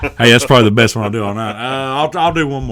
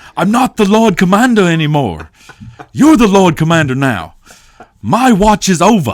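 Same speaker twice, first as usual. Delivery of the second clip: loud, pitched-up, put-on Northern Irish accent; 8 semitones higher, 5 dB louder than usual. Trying a scene line the way a man would say it, Northern Irish accent impression. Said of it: "Northern Irish accent that's really hard to replicate".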